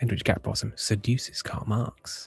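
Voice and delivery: quiet whispering. Commenting on election results as they come in, whispering. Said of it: "I'm whispering now".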